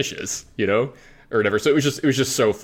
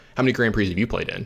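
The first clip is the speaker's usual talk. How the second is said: put-on deadpan delivery, faster pace. Speaker retells the question Brian asks them now and then, retelling Brian's deadpan. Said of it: "Brian will just deadpan look at me and just go".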